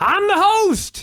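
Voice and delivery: very high-pitched screaming. Describing Flair at the announce desk, the speaker retells Flair's scream. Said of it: "and he's screaming".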